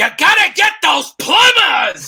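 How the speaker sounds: shrill, very loud, high-pitched, hard yell. Imitating how the actor shouts in his Heat era: Al Pacino impression, shouting. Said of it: "that was a great Pacino impression".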